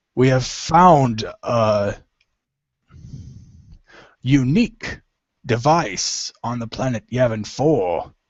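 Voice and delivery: slow put-on creature voice, every word drawn out. Reading the agents' news of a device on Yavin four, in a Hutt voice. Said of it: "I can't do a Hut voice at all, but I'll try".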